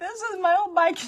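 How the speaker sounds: put-on very high, loud, sobbing crying child's wail. Retelling a grandchild's upset reply about an Easter bike: imitating a child crying. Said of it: "she's crying".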